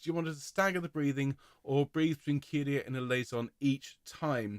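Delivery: ordinary talk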